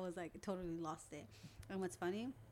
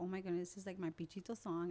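ordinary talk, nothing marked

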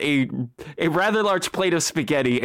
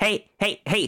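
tiny, little imp creature voice; 3 semitones higher than usual. Storyteller voices a little voice calling out to the listener, small creature voice. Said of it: "you hear a little voice go".

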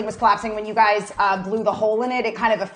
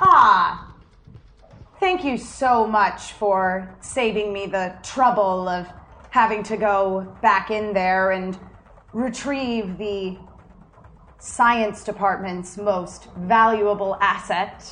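slow, unhurried character voice. Voicing an Imperial scientist who thanks the party: Imperial scientist voice. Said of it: "down from the ramp comes an Imperial, clearly some sort of Imperial scientist".

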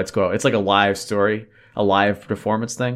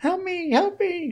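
silly tiny fly voice, much higher. Recalling a film scene with a fly, in a silly tiny fly voice. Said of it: "That silly voice".

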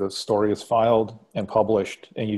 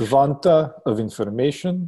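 mock Russian accent, higher; 4 semitones higher, 4 dB louder than usual. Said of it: "the Russian voice".

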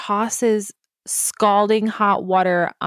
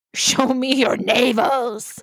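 crazed, unhinged, madman-style, held-back yell; 3 semitones higher than usual. Retelling how a man in a movie kept screaming a line, retelling an insane scream. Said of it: "screamed in this way that was very... like a completely insane person".

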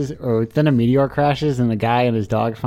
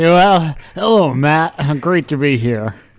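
slow, deliberate, high-energy podcast-host voice; 3 semitones higher, 5 dB louder than usual. Podcast co-host, told he sounded sad, redoes his hello with high energy. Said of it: "Some high energy?".

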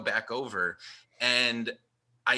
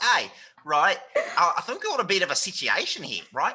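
put-on, animated, high Australian accent; 7 semitones higher, 4 dB louder than usual. Telling a story about a man from Perth, the speaker does his Australian accent. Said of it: "So he was from Perth".

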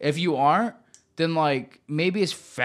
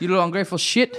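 badly done, put-on Italian accent; 3 semitones higher than usual. Acting out a family scene, the speaker uses a bad italian accent. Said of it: "That's a bad Italian accent".

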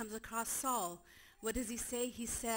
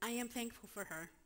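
tearful, crying speech; 5 dB quieter than usual. Giving thanks for mothers on Mother's Day, crying while speaking. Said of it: "I don't know why I'm crying".

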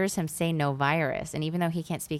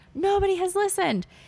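mock scream pitched very high; 4 dB louder than usual. Retelling a man's words, imitating him screaming. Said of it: "he's just screamed like".

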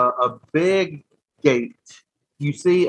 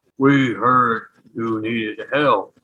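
deep, low rumbling elemental creature voice; 4 semitones lower than usual. The narrator voices an air elemental speaking to the group: deep rumbling elemental voice. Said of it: "As you hear this deep rumbling".

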